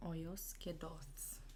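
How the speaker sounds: low, whispered under the breath.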